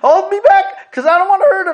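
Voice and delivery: shrill, bellowing, very high and very loud yell. Acting out what he yelled during a play fight, retelling his yell. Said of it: "and he'd be yelling".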